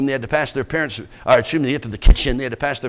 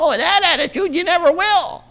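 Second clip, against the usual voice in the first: very high pitch, parroting the exact same tone. Retelling how the speaker's father, from the pulpit, answered a woman, mimicking her tone of voice. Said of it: "mimicked her exact tone of voice".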